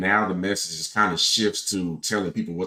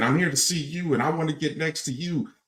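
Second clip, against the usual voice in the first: pitched-up, screaming delivery; 8 semitones higher than usual. Retelling a woman behind him at an event: imitating a woman screaming. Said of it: "She kept screaming".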